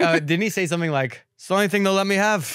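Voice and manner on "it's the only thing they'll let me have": put-on slight Irish accent, pitched up. Retelling what a friend's father said at an after party: slight irish accent. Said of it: "I gave your dad a slight Irish accent".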